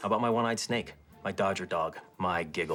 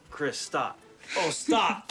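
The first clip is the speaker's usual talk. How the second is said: mock screaming, pitched higher; 9 semitones higher, 3 dB louder than usual. Retelling what the other speaker was screaming earlier: imitating someone screaming. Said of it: "That's not what you were screaming".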